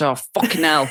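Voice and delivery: put-on British accent from Derby. Imitating how another person says a swear word: imitating a british accent. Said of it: "She says it British".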